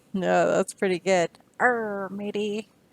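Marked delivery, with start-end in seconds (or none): 1.6-2.6 put-on pirate character voice. Reading a pirate picture book to kids, showing a pirate voice. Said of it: "your best pirate impersonation".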